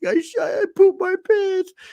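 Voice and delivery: acted, very high, slow sobbing little child voice. Retelling a sick son crying on the toilet: imitating a crying child. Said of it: "he's crying".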